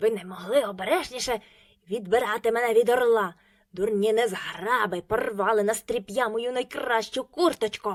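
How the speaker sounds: loud, hoarse, harsh shout. A rescued dwarf yells at the children who pulled him free, hoarse shout. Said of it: "закричав на них хрипким голосом".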